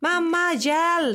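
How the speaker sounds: very high-pitched put-on scream. Mother retelling how her daughter screamed in the pool, imitating daughter's scream. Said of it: "skrek min dotter så här".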